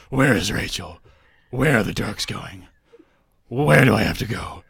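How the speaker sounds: loud, guttural, rapid-fire. Mocking a film hero's repetitive questions: guttural Batman voice. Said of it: "one after the other in quick repetition".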